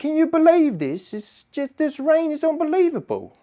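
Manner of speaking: terrible put-on London accent, very high. Retelling what locals said about the rain: bad imitation of a London accent. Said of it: "really sorry for that accent".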